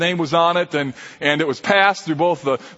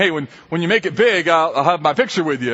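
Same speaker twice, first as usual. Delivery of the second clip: ordinary delivery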